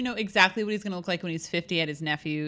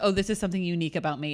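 ordinary talk

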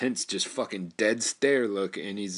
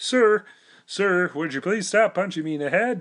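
very high pitch, loud; 10 semitones higher, 6 dB louder than usual. Retelling a big bald guy begging not to be punched, Kermit the Frog-like voice. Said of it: "is that Kermit the frog?".

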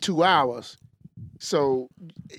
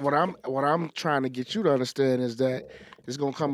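ordinary talk

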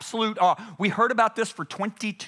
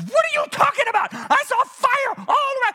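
put-on very high, swooping, angry outburst; 4 dB louder than usual. Retelling the soloist's reply in the car: imitating someone angry. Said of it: "She's mad at me".

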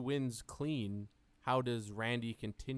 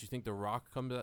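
normal talking voice

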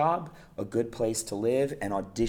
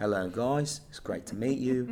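put-on London Cockney accent; 2 semitones higher than usual. Retelling a young actor greeting the room at an audition, imitating a Cockney accent. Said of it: "Part of my Cockney".

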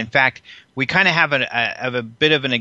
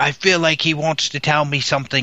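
put-on English accent; 2 semitones higher than usual. A speaker quoting a writer's reaction to an interview, in an English accent. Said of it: "that's supposed to be an English accent I'm doing right there".

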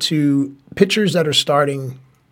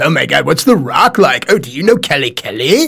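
raised, put-on British accent; 5 dB louder than usual. Mocking Mike's wrestling questions from when they first met, imitating Mike, British accent. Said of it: "You bring this accent out a lot".

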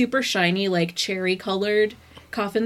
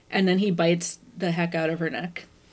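ordinary talk

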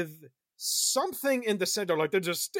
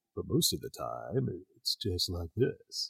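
very low, smooth, mellow, unhurried voice; 12 semitones lower, 6 dB quieter than usual. Show how the Darkling speaks most of the time, in a very mellow Darkling voice. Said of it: "the Darkling speaks in this very mellow voice".

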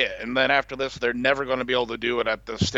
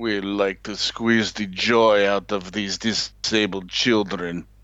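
put-on Russian accent; 4 semitones lower than usual. Commenting on russia getting the stripped gold medal, in a russian accent. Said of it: "Absolutely excellent Russian accent".

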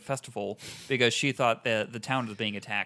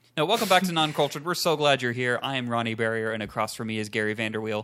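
ordinary talk, nothing marked

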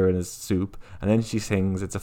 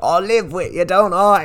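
bad, very high, put-on British accent; 9 semitones higher, 7 dB louder than usual. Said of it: "a lot of bad, uh, British accents".

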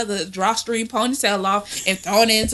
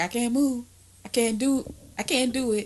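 acted pained, hurting, helpless complaining voice; 5 dB quieter than usual. Retelling lying in bed with back spasms: imitating own past self in pain. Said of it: "Everything hurt".

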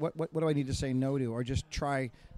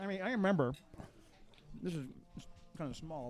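talking while chewing, mouth full; 3 semitones higher, 6 dB quieter than usual. Starting a story about being younger, talking with mouth full. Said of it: "I'm sorry, my mouth is full".

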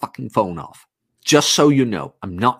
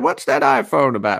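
put-on creaky dad voice, high and rough; 6 semitones higher than usual. Retelling what dad said on seeing an iphone: imitating dad. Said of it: "He doesn't actually talk like that".

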